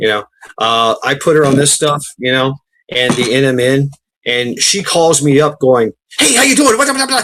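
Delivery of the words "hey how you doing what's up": very high, mile-a-minute rapid-fire chatter. Retelling the speaker's mother calling up after starting a new supplement, imitating rapid-fire talking. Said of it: "Just a thousand miles an hour".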